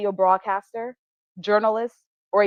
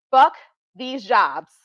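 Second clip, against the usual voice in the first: plain, emphatic, loud and clear declaration; 3 dB louder than usual. Addressing viewers after excusing the language: loud and clear. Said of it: "I wanna say it loud and clearly".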